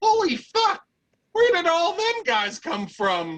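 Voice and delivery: very high, cackling impish voice. Voicing an imp on top of a wall: cackling imp voice. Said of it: "You hear a cackling imp".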